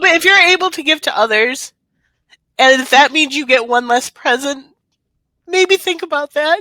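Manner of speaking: high, tearful, holding back, fighting tears. Speaking to the audience, holding back tears. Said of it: "I'm trying not to cry".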